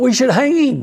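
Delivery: high, mock shout.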